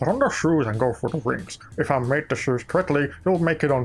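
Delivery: put-on Scottish-sounding voice. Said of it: "this voice, it always comes out".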